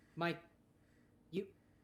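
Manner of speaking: ordinary talk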